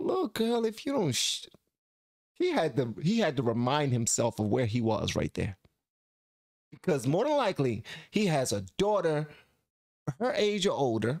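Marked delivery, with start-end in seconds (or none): 0.0-1.5 very high-pitched, abruptly halted, cut-off reaction. Reacting to a clip, voicing what the man thinks: imitating the man's reaction. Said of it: "It's like".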